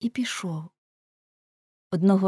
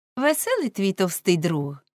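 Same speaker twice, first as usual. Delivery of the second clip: ordinary delivery, nothing marked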